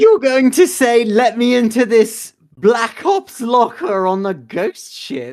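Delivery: very loud, snorting, incredulous disbelief. Voicing a character questioning a plan to call the boss: incredulous. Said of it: "incredulously snorts and goes".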